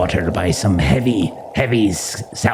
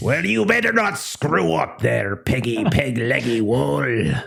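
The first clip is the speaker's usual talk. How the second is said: bad put-on pirate voice, pitched up, rough; 6 semitones higher than usual. Players must talk like a pirate; warning another player in a very terrible pirate voice. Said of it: "that was a very terrible voice".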